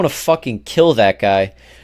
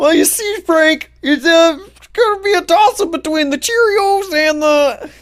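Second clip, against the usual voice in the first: very high-pitched cartoon frog-puppet voice. Answering a question about cereal as Patrick Mahomes, Kermit-like voice. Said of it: "he talks like Kermit".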